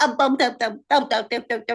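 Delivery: put-on singsong baby-talk babble. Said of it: "this baby talk at the moment to me".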